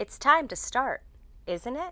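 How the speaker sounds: isn't it with pitch lifting up at the end. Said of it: "We use upward intonation for these questions".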